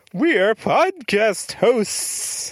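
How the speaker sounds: high, ghostly, eerie put-on voice. A podcast host addresses the audience in a spooky voice. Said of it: "now you just seem like you're doing a spooky voice".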